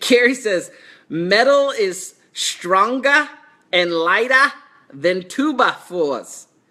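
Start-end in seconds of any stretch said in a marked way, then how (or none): 1.1-6.4 put-on Boston accent throughout. Talking to Carrie about building with metal studs, the speaker uses a Boston accent. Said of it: "How's that for a Boston accent?".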